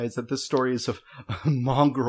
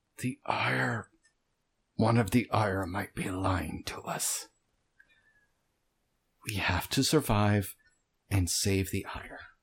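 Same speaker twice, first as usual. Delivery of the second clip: words forced slowly through clenched teeth; 3 semitones lower, 4 dB quieter than usual. Voicing a tense, straining warrior warning the others: through gritted teeth. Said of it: "he says through his teeth".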